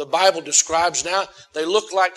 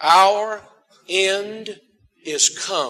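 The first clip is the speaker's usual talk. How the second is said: drawn out slowly, unhurried. Leading listeners in repeating a Bible verse together, said slowly. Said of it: "Let's say it slowly".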